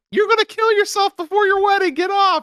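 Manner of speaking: high-pitched, shrieking scream. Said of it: "She started screaming".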